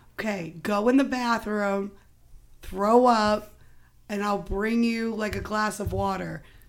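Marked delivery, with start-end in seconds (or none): none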